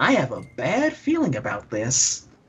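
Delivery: swooping, animated cartoon voice with pitch swooping around. Repeating a Star Wars quote for the others, the speaker does a Jiminy Cricket impression. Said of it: "that was actually good".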